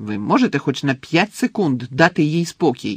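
cross, angry words snapped out. A character angrily defends someone the others are criticizing; angry snap. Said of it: "сердито кинув".

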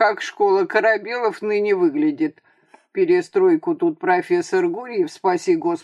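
ordinary delivery

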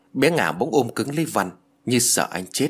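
ordinary delivery

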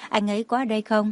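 plain

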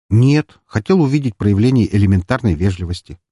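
usual speaking voice

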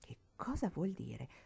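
murmured fearfully, frightened. A girl, once the one who rebuked her has moved off: murmured fearfully. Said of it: "E lo mormorò impaurita".

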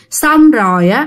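ordinary delivery

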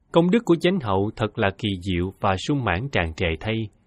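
ordinary delivery

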